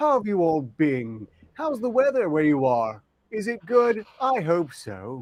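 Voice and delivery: exaggerated sarcastic pleasantness, slow with swooping pitch. Asking the others about their weather in character: sarcastic tone. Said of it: "Why does it sound sarcastic when he says that?".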